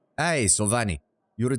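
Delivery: put-on Slavic-tinged accent. Voicing a character's greeting, trying a different voice, slipping into Slavic accent. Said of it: "I keep slipping into Slavic".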